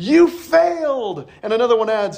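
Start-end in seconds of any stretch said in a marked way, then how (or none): 0.0-1.3 acted-out delighted cheer, high and joyful. Retelling a scene where a family member cheers a failed test: imitating a joyful shout. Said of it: "shouts with joy".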